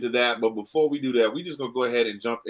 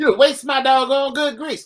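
very high, shrill, loud scolding mother voice; 7 dB louder than usual. Talking about youngsters and getting whooped, the speaker imitates their mother's voice. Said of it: "My mother sounds nothing like that".

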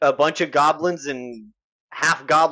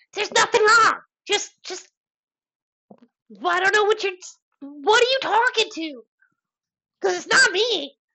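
squeaky, very high little goblin chatter. Voicing a little goblin bystander answering a player: little goblin character voice. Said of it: "He just is like".

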